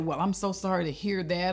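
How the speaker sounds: plain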